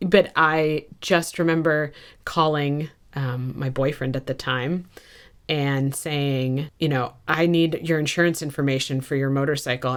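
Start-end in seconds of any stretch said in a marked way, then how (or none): 7.3-10.0 flat, level, toneless monotone. Retelling a call asking a boyfriend for insurance information: monotone. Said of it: "and being so monotone".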